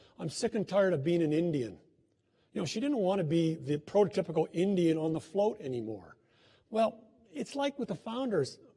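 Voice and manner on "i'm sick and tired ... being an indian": normal talking voice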